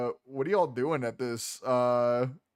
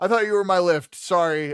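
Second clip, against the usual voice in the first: put-on drunken gnome voice, much higher and louder; 5 semitones higher, 7 dB louder than usual. In a role-played scene, the gnome speaks up in a drunken gnome voice. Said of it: "drunken gnome".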